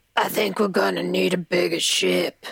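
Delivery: made-up crunchy, rough, creaky character voice. Quoting a line from Jaws in a made-up voice: put-on crunchy voice. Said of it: "made a voice that was not in the movie".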